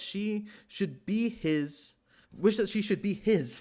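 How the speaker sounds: words breaking up with laughs, reading through laughter. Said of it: "I'm not laughing 'cause this is funny".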